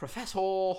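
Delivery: very odd put-on posh accent, high and loud. Retelling a film scene where a woman runs out calling: imitating an odd posh accent. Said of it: "a very odd posh accent".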